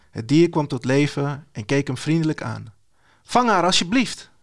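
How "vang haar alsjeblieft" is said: high, urgent, panicked shout. Calling to a winged panther for help, shouting in panic. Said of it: "riep Bones in paniek".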